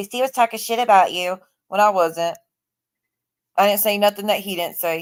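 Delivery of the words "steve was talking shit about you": ordinary talk, nothing marked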